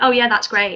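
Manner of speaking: snide, sarcastic, dripping tone. Showing how someone might reply in a difficult conversation: imitating a sarcastic comment. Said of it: "if somebody makes a sarcastic comment".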